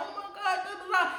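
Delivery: put-on crying voice. Retelling a phone call for help, imitating own past crying. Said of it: "Imagine I'm sitting up there crying like".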